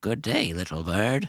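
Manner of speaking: put-on elderly cat lady voice. Voicing an old hooded tabaxi lady greeting a player: old tabaxi lady voice. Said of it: "she looks up to you and says".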